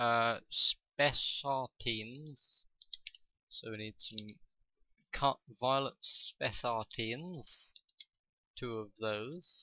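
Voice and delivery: slow, oddly drawn-out talking. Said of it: "don't know why I'm talking like this".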